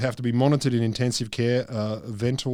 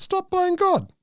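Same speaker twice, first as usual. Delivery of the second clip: fake Greek accent, pitched way up high; 3 dB louder than usual. Speaker mocking critics of early transplants: put-on Greek accent. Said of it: "That's my Greek accent".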